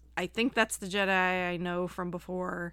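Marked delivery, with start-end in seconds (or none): none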